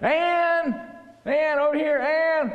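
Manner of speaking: very high, very slow, loud calling out. Demonstrating calling to someone across a crowded street; calling out loudly. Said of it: "You got to have a louder voice".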